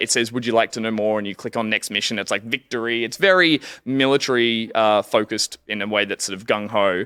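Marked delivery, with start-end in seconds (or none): none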